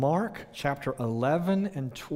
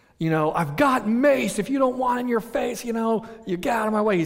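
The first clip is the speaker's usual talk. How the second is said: loud, pitched-up shouted yell; 9 semitones higher, 6 dB louder than usual. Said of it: "And the guy yells".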